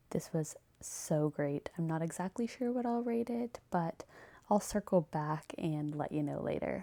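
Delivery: hushed whisper. Reviewing a book late at night while her husband is asleep, whispering. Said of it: "I kind of have to whisper".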